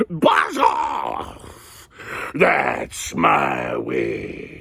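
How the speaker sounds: very slow, very low, deep croaking monster growl. Reading a story, the creature from the ditch speaks to the dragon in a growling monster voice. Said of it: "was a yowl, and a growl, and a croak, and a shriek".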